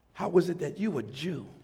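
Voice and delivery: mock condescending, full of scorn. Retelling a woman's question to someone, mock-condescending tone. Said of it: "That's a condescending tone".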